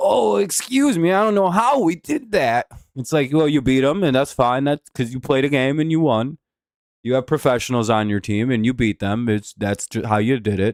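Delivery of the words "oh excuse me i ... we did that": feeble, wimpy little voice, high and slow. Talking about fans he hates, mimicking how they sound: mocking a weak wimpy fan. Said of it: "They just sound so weak and like wimpy".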